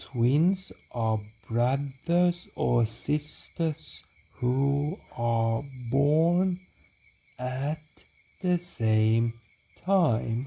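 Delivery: overly slow read-aloud, words dragged out. Showing a class a bad example of reading aloud: reading far too slowly. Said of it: "So that was way too slow".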